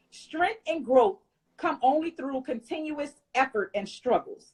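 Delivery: normal talking voice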